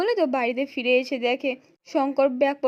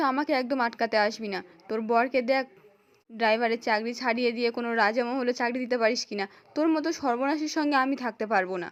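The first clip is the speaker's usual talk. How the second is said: ordinary delivery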